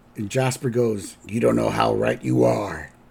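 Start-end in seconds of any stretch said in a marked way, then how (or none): 1.3-2.9 put-on very low, creaky old man voice. Recounting a scene for listeners, saying Jasper's reply in Jasper's voice. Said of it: "I'm trying to do Jasper's voice".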